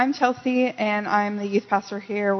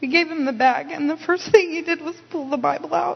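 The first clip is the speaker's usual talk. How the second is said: overcome with emotion, pitched-up, emotional delivery; 7 semitones higher than usual. Recounting handing a bag to a man on the street; emotional. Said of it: "I'm emotional".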